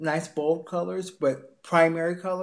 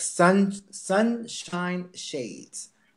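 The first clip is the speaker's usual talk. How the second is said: very slow, with each word stretched out. Speaker recalling a term while listing summer ideas, said very slowly. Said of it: "I have to say that really slowly".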